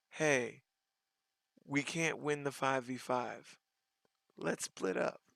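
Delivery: mock relaxed, chilled-out, very soft, quiet murmur. Retelling what a player said in a game: imitating a calm voice. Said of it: "he calmly said".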